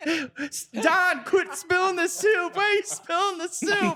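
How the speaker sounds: shrill, very high scolding yell from afar. Retelling a friend yelling across the room about spilled soup: imitating a yell. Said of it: "Steve's yelling from the background at you".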